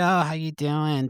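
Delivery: put-on Boston accent. Quoting a lady the speaker hates greeting them, imitating her Boston accent. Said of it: "In her fucking Boston accent".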